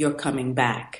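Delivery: scary, stern motherly tone, low and quiet. Recalling their art degree, the speaker imitates their mother, in a scary tone. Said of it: "with that tone of voice, I'd be kind of scared too".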